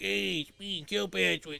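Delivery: high, slow, creaky line read. Mocking a game side character's terrible voice acting: imitating Kilpatrick's bad voice acting. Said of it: "The side quests in this game are terrible".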